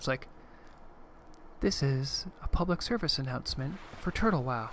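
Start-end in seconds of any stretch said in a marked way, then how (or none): 1.6-4.7 soft, warm, quiet voice. Making a public service announcement for Turtle Wow: warm and quiet. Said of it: "like my voice got really like warm and quiet".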